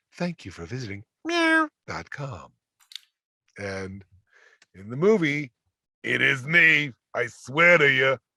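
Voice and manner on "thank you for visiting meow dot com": calm automated machine-like voice. Recalling a movie voice role, the speaker redoes the line: calm meow.com computer voice. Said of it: "giving them this co- calm computer voice".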